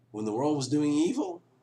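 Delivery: voice cracking, breaking and giving out. Speaker apologizes as the voice goes: voice cracking. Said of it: "my voice is going, I'm sorry".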